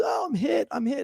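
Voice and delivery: very high, drawn-out, startled, frightened cry. Describing a man caught off guard when he got hit, mock-scared 'I'm hit'. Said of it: "you can hear it in his tone of voice".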